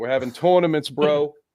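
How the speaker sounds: put-on New York bro accent. Announcing an upcoming wrestling tournament: New York accent. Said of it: "adding in the New York accent".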